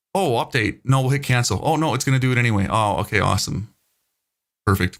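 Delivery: ordinary delivery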